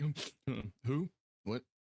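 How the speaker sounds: drowsy, confused, just-woken voice. Voicing a character whose snore bubble pops as he wakes: just woken from sleep. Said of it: "snore bubble pops from his nose, and he's like".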